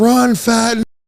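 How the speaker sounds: mock high, shrieking, screamed yell. Retelling what an ex-girlfriend screamed while he hid behind cars: imitating someone screaming. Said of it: "while she's screaming".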